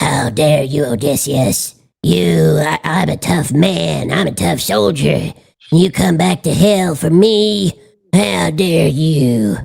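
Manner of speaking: very low, deep cartoonish voice. Testing whether the voice change works, lines in a South Park voice. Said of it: "I'm going to pitch myself up to South Park".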